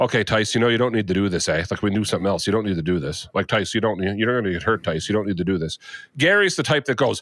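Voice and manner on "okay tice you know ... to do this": put-on whisper, lower. Retelling how a wrestling friend would urge caution: imitating Cameron whispering. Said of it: "whispers to you".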